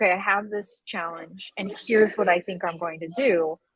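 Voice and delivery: plain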